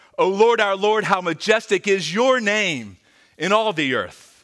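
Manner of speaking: loud, high, proclaiming exclamation. Reading a psalm aloud to listeners, as a loud exclamation, not quietly. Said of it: "I don't believe you can read this psalm quietly".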